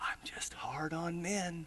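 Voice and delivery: whispered, confiding voice. Retelling what a third wife said into his ear: imitating a whisper. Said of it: "to whisper in my ear".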